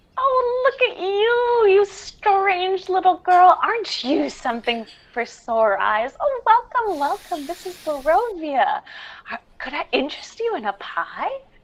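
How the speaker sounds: put-on high, sweet old-woman voice. Voicing a little old lady selling pies at her cart: little old lady voice. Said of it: "a common little old lady".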